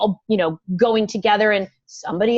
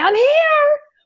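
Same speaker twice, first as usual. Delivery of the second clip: high, loud, belted-out shout. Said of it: "are you gonna barrel in and say".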